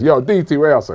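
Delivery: put-on Jamaican accent. Imagining a Bruce Almighty-style film, the speaker plays God calling out; God in Jamaican accent. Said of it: "God talks in a Jamaican accent and says".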